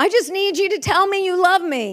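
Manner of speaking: mock weepy pleading, crying through tears. Retelling what she said to her husband while crying: imitating her own crying plea. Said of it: "so I'm crying, I'm crying".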